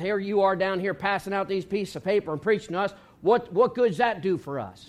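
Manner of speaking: plain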